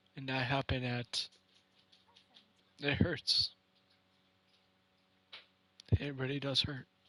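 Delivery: speaking through tears, crying. Speaking to viewers in a video about something that hurts: crying while talking. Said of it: "crying so much like I am now".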